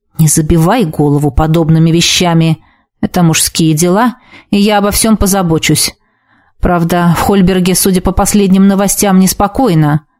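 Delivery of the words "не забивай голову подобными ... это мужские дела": usual speaking voice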